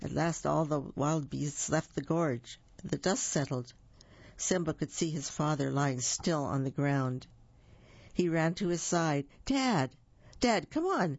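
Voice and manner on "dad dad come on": swooping, high crying out. Narrator reads a son trying to wake his father lying still, crying out. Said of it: "Simba cried".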